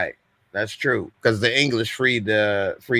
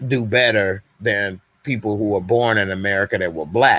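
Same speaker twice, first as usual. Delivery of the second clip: usual speaking voice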